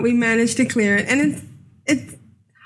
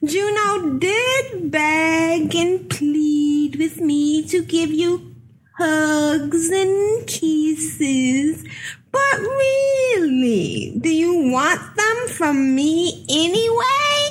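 put-on wicked witch voice, higher pitch; 5 semitones higher than usual. Reading a note from a wicked witch aloud, as asked: put-on wicked witch voice. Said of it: "Put on a special voice".

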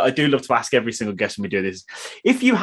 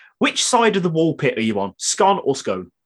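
ordinary delivery

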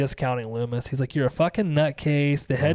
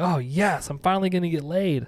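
put-on excited voice; 3 semitones higher than usual. Retelling a scene where Lori hears about a boyfriend: excited Lori voice. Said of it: "Lori gets very excited".

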